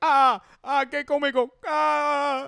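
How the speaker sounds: put-on very high, loud Cuban accent with ah stretched out. Retelling a joke that was told in spanish: cuban ref impression. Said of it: "my Cuban ref impression".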